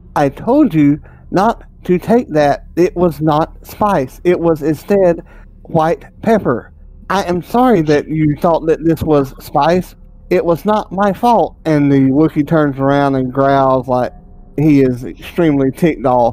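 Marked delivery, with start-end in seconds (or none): 0.2-11.6 mechanical, robotic droid voice. Narrating a story where the droid walks in and speaks, droid voice. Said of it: "the droid walks in, and you hear him say".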